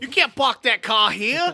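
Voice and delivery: very loud, shrill, high-pitched Boston accent. Asked to let them hear it, doing a Boston accent. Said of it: "Let's hear your Boston accent".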